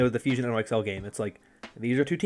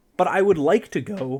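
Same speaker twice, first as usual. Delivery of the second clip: voice breaking mid-line, cracking and jumping high; 6 semitones higher than usual. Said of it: "that was a bad voice crack".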